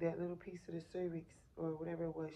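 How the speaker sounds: ordinary delivery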